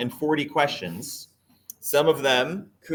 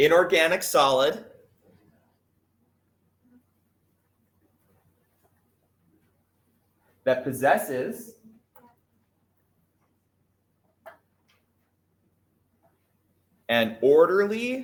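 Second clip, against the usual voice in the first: deliberately slowed, measured speaking pace; 2 semitones higher than usual. Asked to repeat a definition slower for someone taking notes, slow dictation pace. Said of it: "Say it slower".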